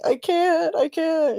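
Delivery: very high, slow, put-on distraught pleading tone. Retelling a show scene where a character fakes being distraught: imitating a character faking distress. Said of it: "pretending that she's so distraught".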